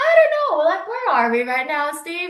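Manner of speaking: very high, loud, loose put-on drunken rambling. Retelling a wine tasting where mom acted drunk: imitating mom acting drunk. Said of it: "acting as if she was so drunk".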